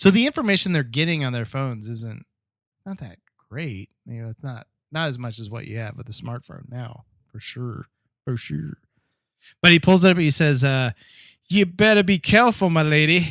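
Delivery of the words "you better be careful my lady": loud, poor put-on English accent. Retelling what a man said as he pulled up his phone, poor English accent. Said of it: "that's my poor English accent".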